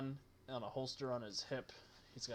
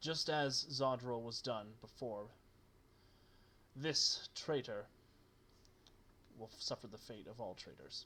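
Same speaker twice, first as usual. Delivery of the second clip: gruff, rough voice. Narrator voicing a man addressing the crowd, in a gruff voice. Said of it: "he has this sort of gruff um, voice".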